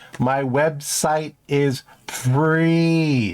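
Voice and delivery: very slow, drawn-out, emphatic delivery.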